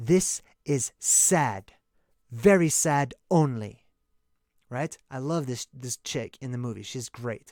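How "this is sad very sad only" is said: grave, serious, very slow delivery. Retelling a movie scene where she answers after a kill: imitating someone speaking seriously. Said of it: "steadfast, serious look".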